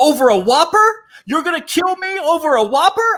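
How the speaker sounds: loud, very high-pitched, shouted outburst. Retelling a confrontation with two men over a Whopper, retelling a loud outburst. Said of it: "I said this so loud".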